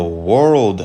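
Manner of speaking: leaning on world with stress. Speaker reading a scripture passage aloud to listeners, stress on 'world'. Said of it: "I put emphasis on the word world".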